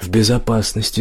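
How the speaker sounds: usual speaking voice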